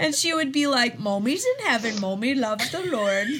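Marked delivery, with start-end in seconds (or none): 1.0-3.3 special dog-talk voice. Retelling how a woman talked about her late dog, in a dog voice. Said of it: "talk to the dog in this dog voice".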